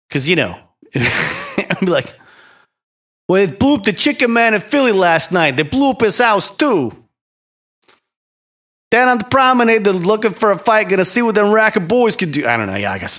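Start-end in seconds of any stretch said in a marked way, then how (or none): 3.3-12.4 bad fake New Jersey accent, pitched way up. Speaker shows how he would sound opening for a star, in a put-on new jersey accent. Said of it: "I'm sorry if you're from New Jersey. I'm terrible".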